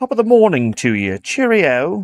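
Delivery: put-on plummy posh accent. Greeting a friend, the speaker pretends to be Carl: posh Carl voice. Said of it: "It's actually posh Carl".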